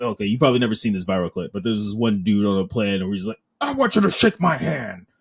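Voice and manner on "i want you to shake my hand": put-on forceful, pushy, aggressive insistence, pitched up. Imitating a man on a plane from a viral clip: imitating an aggressive demand. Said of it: "And it was very aggressive".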